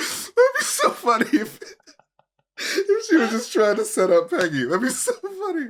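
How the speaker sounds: crying with laughter. Picturing a funny scenario while talking: laughing to tears. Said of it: "I don't know why I'm crying".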